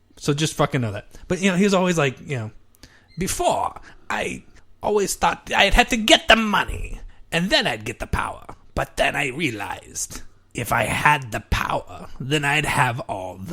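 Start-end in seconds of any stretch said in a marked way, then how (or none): 3.2-13.6 rough, slow, drawn-out put-on cartoon villain voice. Quoting something a man always says, in a Cobra Commander-ish voice. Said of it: "I'll try a Cobra Commander-ish type voice".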